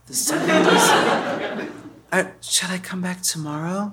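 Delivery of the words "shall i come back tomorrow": quiet, half-whispered, under the breath. Showing how people talked in the seventies: half-whispering. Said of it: "This kind of whispering".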